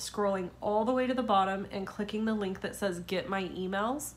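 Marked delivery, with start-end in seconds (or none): none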